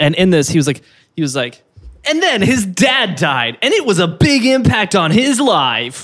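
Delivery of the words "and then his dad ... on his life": put-on one-tone TV narrator voice. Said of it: "That narrator".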